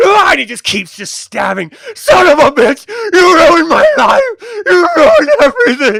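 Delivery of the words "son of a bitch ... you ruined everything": enraged shriek, very high and swooping. Voicing an admiral stabbing a body: screaming in rage. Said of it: "he just screams and buries it into Verkaz".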